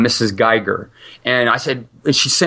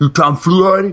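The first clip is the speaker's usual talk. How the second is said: put-on gruff, rough-voiced New York accent, pitched up; 7 semitones higher, 3 dB louder than usual. Retelling a phone call about a sent resume: gruff New Yorker voice. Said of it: "this really gruff New Yorker".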